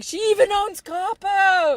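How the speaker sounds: high, slow, excited yell. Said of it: "Griffin yelling".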